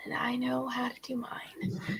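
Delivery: hushed, very quiet mutter under the breath. Answering a character in the scene, muttered under her breath. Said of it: "she kinda says under her breath".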